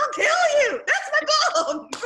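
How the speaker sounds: mock, very high-pitched, loud shrieking outburst. Retelling the way he shrieks as an automatic reaction, retelling a shriek. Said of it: "the way that he like shrieks".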